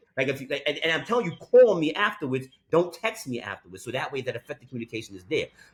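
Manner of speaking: ordinary talk, nothing marked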